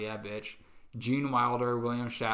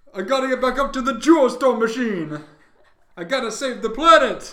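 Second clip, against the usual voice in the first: put-on old man voice, higher and louder; 13 semitones higher, 14 dB louder than usual. Continuing the Bernie Sanders voice, which another speaker says sounds like Larry David: Bernie Sanders voice that sounds like Larry David. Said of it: "Now you just sound like Larry David".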